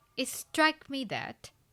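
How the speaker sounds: heavy emphasis on struck, said loudest. Sentence stress example, stressing the content word struck. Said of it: "yes struck".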